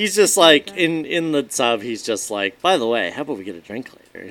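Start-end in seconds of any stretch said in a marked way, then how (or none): 2.6-4.3 put-on playful voice, faster. Speaker retells a scene, acting out Dean's line: playful Dean impression. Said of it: "tone of voice that he's being playful".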